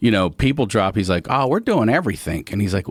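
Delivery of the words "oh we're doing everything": put-on Baltimore accent, "everything" said as "everythink". Retelling a junkyard visit, imitating a Baltimore accent. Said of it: "Did you just put a K on the end".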